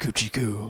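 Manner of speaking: dead-serious, straight, totally deadpan delivery. Retelling a movie moment to another speaker: imitating Wesley Snipes's dead-serious voice. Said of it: "Wesley Snipes in the most serious voice goes".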